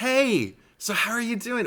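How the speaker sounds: very high, squeaky little voice at an unhurried pace. Retelling a video call with a kid: Peter Parker voice. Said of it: "With his little Peter Parker kinda".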